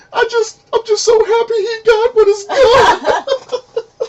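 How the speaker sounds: very high-pitched, weepy, drawn-out blubbering sob. Retelling how a cousin reacted to a movie scene: imitating someone bawling. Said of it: "she just starts bawling".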